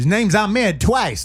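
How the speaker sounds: high, loud mock paranoid accusing voice.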